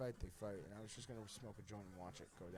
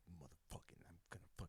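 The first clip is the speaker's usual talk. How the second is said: seething, angry muttering under the breath, whispered; 5 semitones lower, 11 dB quieter than usual. Retelling a food theft, imitating Aiden mumbling angrily to himself. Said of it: "mumbling to himself".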